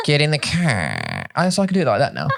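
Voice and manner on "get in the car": very slow Boston accent, car stretched out. Showing a Chinese-speaking listener how people in Boston say it, in a Boston accent. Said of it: "if I'm going to emulate the accent".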